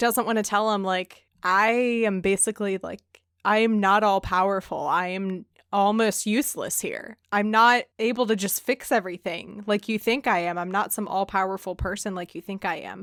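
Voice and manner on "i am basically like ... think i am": ordinary talk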